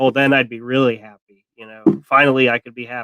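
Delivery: acted-out, imitated sarcastic tone. Recapping a scene between two characters, retelling his sarcastic reply. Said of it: "But he's being sarcastic".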